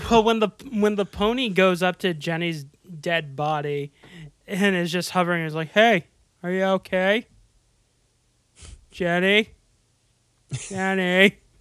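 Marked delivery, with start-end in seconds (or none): 5.7-11.3 slow comic voice, each word drawn out. Voicing the pony over Jenny's body: Brian Regan impression. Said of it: "You're making me sound like Forrest Gump".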